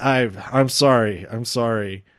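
mock, tearful delivery through a little crying. Retelling how Roman apologizes in the match: imitating Roman Reigns crying. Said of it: "Roman starts crying a little bit and is like".

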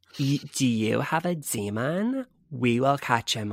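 put-on California accent. Comparing regional demon-catcher slogans, doing the california one, imitating californian accent. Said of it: "and then in California".

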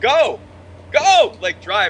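acted, very slow, high, loud, drawn-out yell. Retelling being pulled from a cab, shouting at the driver: retelling his own yell. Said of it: "I'm yelling at him".

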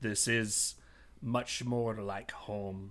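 very quiet, unexpectedly deep voice. Game master voicing her as Nick's heart flutters: deeper voice than expected. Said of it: "in a deeper voice than you would imagine".

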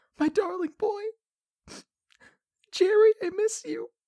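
quiet sobbing creature voice. Narrating a scene as others leave, voicing a grieving kobold sobbing quietly. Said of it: "sobbing quietly in the corner".

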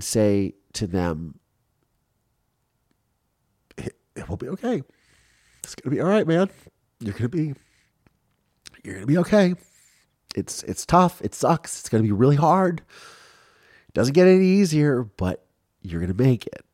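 voice cracking with emotion. Reassuring people going through a hard time, voice cracking with emotion. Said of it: "you go back there when the voice cracks".

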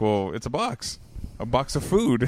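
mock deadpan, flat sarcastic delivery. Retelling a reply to a coworker's repeated question, in a sarcastic deadpan. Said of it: "I give them like a sarcastic response".

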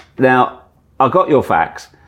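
measured, unhurried delivery. Retelling a surprise phone call, quoting the caller: Michael Caine voice. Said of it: "the voice went".

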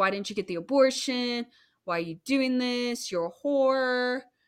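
angry, accusing rant, half-voiced. Recounting how a man yelled at a woman in the park, retelling his yelling. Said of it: "he was just yelling at her".

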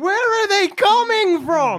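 very high-pitched shriek. Voicing Adam during a fight as creatures attack: screaming. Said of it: "Adam screams".

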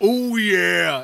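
booming, high-pitched, full-volume mascot holler. Imitating a mascot bursting in: Kool-Aid Man voice. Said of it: "Mitch just breaks and goes".

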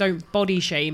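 ordinary delivery

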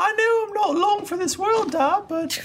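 put-on very high child voice.

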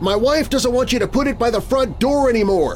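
loud, very high voice. A man speaks up so the janitor can hear him; speaking loudly. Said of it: "still speaking loudly".

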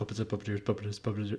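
rapid-fire repetition. Taking up a challenge to repeat a phrase over and over, very fast. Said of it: "can you say puppets and puppeteers really fast over and over".

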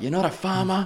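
loud shouting, pitched very high. Retelling the speaker's retort to someone yelling at them, retelling a shouted argument. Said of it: "we're just fighting at each other".

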